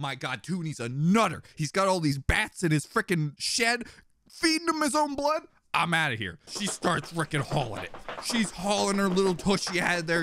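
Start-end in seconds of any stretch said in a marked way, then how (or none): 0.0-6.4 alarmed, spooked, freaked-out rant with rising pitch. Retelling how a character freaks out and flees: imitating someone freaking out. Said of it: "But then she freaks out".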